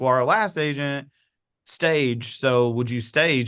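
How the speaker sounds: plain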